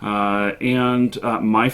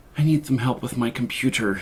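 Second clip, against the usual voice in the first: put-on soft-spoken voice with a lisp. Retelling a customer's request for computer help: imitating a soft-spoken lisping customer. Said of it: "he spoke like that guy, uh, Office Space".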